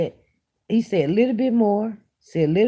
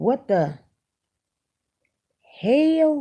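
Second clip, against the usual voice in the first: put-on mischievous, defiant little kid's outburst; 3 semitones higher than usual. Retelling how a child now says a phrase: imitating a child saying it. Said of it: "he says it like this".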